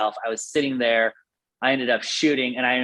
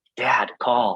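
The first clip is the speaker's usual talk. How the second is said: imitated whisper. Retelling a hunt, whispering to the father to call: retelling a whisper. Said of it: "I remember whispering to my dad".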